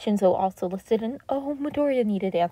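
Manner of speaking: plain reading voice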